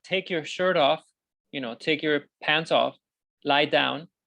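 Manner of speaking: ordinary talk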